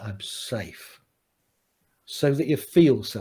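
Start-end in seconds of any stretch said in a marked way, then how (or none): 0.0-1.0 very hushed whisper, steady, sure and firm. Showing how to reassure yourself after danger passes: soft and firm. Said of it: "you say it very softly and firmly".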